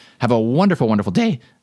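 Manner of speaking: voice cracking and breaking. Signing off a short tips podcast episode to listeners, voice cracking. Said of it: "My voice just cracked".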